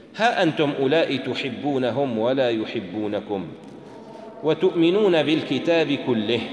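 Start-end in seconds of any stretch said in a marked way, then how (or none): none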